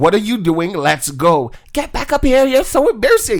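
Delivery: high yell, rising in pitch as it goes. Retelling yelling at her to get back up the movie stairs: retelling own yell. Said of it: "And I yelled at her".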